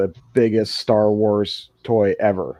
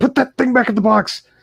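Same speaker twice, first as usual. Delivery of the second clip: high-pitched mock yelling. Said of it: "I just wanna yell at that little kid".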